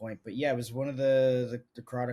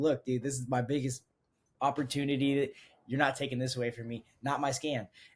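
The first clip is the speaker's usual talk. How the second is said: put-on heated, riled-up yelling outburst; 2 semitones higher than usual. Retelling yelling at the man reviewing the scan, re-enacting the yell. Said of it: "And I'm just like yelling at him".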